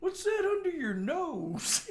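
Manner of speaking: innocent, guileless, very high, drawn-out nasal voice. Retelling a drunk friend's question to a waitress: imitating an innocent tone. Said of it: "that innocent, just".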